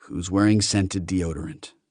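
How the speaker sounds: plain reading voice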